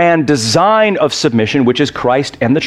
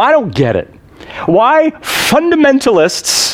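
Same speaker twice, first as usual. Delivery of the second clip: mock very high, very slow contemptuous drawl; 10 semitones higher than usual. Retelling what a professor said in class, mimicking a scornful professor. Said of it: "just with a scorn in his voice".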